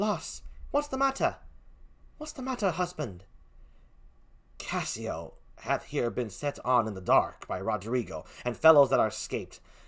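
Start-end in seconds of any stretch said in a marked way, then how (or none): 0.0-3.2 put-on soft, sad, sorrowful, lamenting British accent. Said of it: "I give Amelia a sad British accent".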